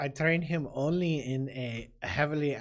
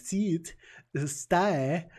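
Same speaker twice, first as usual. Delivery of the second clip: very heavy, thick German accent, laid on; 4 semitones higher, 4 dB louder than usual. Giving example dog commands, in a very heavy german accent. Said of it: "respond to a very a very German accent".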